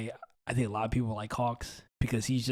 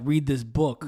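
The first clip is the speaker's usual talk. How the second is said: ordinary delivery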